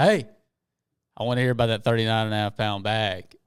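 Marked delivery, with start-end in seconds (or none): none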